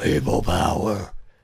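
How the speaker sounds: raspy voice, low and loud. Imitating someone shouting a catchphrase: John Laurinaitis impression. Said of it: "Like John Laurinaitis".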